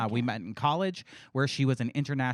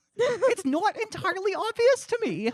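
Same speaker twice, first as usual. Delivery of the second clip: put-on voice pushed very high in pitch; 4 dB louder than usual. Repeating the line, which slides into a Jordan Peterson voice. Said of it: "a little Jordan Peterson-y".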